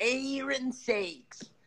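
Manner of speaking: very high, shrill put-on yell. Reading out a viewer's comment: imitating Eric yelling. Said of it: "That's the way he yells that".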